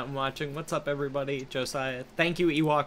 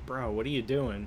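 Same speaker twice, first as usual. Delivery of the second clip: ordinary talk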